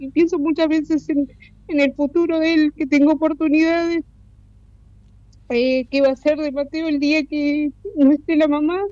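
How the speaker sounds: high-pitched, choked-up with emotion.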